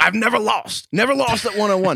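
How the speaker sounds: high-pitched screaming, repeated. Retelling what someone said on a show, imitating LaVar Ball screaming. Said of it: "he just kept screaming".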